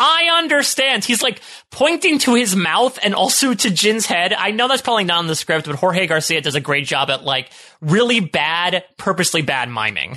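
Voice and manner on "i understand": play-acted, shrill, very high, frantic shout. Recapping a scene where a character mimes while yelling, retelling the yell. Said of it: "when he's yelling".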